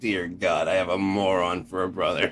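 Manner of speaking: normal talking voice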